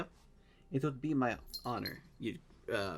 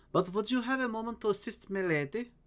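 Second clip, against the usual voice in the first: higher, put-on German accent, calling out; 8 semitones higher than usual. Narrating a woman waving from a docked ship, speaking in a german accent. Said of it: "she says in a German accent".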